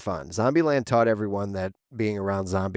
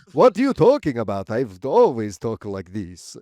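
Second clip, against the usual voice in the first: put-on traditional vampire voice, loud and swooping; 2 semitones higher, 5 dB louder than usual. Joking about suddenly becoming a vampire, the speaker answers in a vampire voice. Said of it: "you don't have to do the voice just because you're a vampire".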